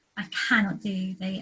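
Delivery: plain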